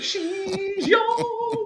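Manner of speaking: put-on old voice, pitched way up.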